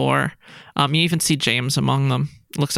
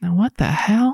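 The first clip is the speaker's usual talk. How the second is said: muttered character voice, much slower; 6 semitones higher than usual. The narrator voices Deacon Jeremiah reacting, under his breath. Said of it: "under his breath be like".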